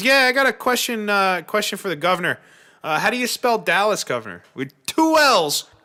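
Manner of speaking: put-on New York accent. Retelling a radio caller's question to the governor, New York accent. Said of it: "you could tell New York accent and everything".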